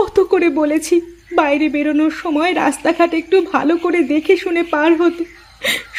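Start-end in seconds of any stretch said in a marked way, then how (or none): 0.0-1.0 high-pitched sobbing wail through the words. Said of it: "বেশি কান্নাকাটি করবার দরকার নেই".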